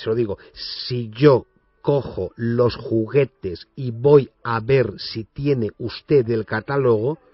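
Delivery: very slow, drawn-out speech.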